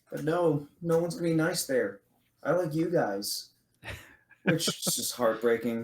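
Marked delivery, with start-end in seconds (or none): 0.1-3.5 put-on childlike voice of a little kid. Recapping a story scene, saying a character's line in a young kid voice. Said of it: "It's just like the kid voice".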